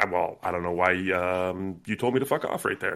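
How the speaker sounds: mock anger, low and quiet. Retelling how Moreno stops someone dead: imitating Moreno low-key mad. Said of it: "low-key really mad".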